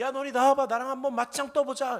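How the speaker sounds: loud high-pitched taunting yell.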